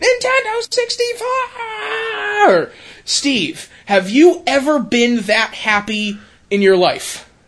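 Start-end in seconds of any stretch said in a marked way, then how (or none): 0.0-2.7 put-on very high, overjoyed, excited child-like shriek. Acting out a kid in a viral video opening his present, retelling a kid's excited scream. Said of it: "starts screaming".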